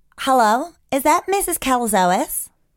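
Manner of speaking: put-on American accent. Trying out different voices, do this one in an american accent.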